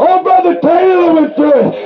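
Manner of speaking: high, rising, rejoicing tone.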